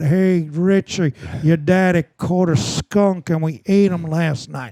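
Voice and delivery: small-town Kansas hometown voice. Showing how a coworker's parents from Kansas talk: imitating Richard Christie's parents. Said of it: "And they talk like that".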